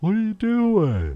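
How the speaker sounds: very high, loud, slow, squeaky sleepy dog voice.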